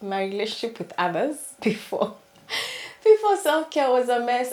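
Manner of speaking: laughing through the words. Speaker describing past relationships with others, laughing while talking. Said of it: "I'm sorry, I'm laughing".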